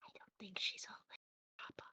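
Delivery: very quiet, hushed, almost a whisper. Voicing a character speaking to papa in character: said very quietly. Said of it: "she says this very quietly".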